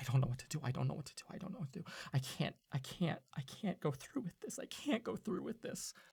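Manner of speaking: quiet, fretful, anxious muttering. Narrating a scene, Bailey left alone at his desk: Bailey muttering to himself. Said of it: "he's just like muttering to himself".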